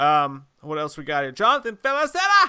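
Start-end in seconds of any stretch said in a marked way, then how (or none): 1.3-2.5 put-on angry Italian chef voice, louder and higher. Announcing the next name on the list, angry italian chef voice. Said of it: "You sound like an angered Italian chef".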